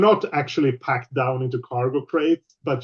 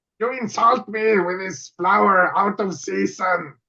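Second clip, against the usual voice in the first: high, gargling, gargly character voice; 6 semitones higher than usual. Speaker performs a character's line: gargly character voice. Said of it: "She she sounds a little gargly".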